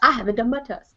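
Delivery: Southern accent in a woman's voice. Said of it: "I shake my head and go".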